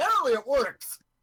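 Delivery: shouting. Praising the great unicorn during a perception check: yelling. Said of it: "You don't have to yell that it works to us".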